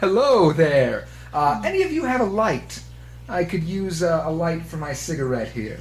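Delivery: ruffian character voice. The narrator voices a stranger asking the group for a light; bearded gang leader voice. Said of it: "spot just a gentleman, tall, big bushy beard, / Yeah, so there's the main guy in front of you who appears to be a little bit beefier. A little bit more. He's definitely in charge. / spot just a gentle".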